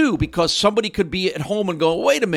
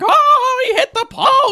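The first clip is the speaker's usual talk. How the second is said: put-on hockey announcer voice, higher and louder; 6 dB louder than usual. Retelling how announcers call a play: Mike Emrick impression. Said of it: "That's a great impression of Doc".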